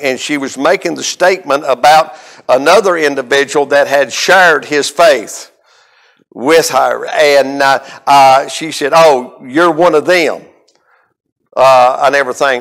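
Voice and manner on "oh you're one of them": put-on sarcastic tone of voice. Retelling a young lady's remark on a reality show: imitating a sarcastic remark. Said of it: "she said it in such a sarcastic way".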